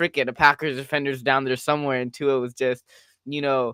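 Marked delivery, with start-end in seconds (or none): none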